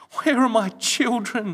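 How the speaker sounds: high, loud, begging, beseeching, pleading. Narrator reads a frightened man asking a voice in the darkness, pleading. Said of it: "he pleaded".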